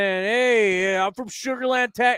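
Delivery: put-on New York accent with drawn-out "hey". Imitating a caller phoning into an Astros talk show, in a put-on New York accent. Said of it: "Why am I going into my New York accent?".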